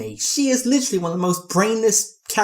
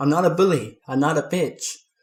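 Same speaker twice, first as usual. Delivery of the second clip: ordinary talk, nothing marked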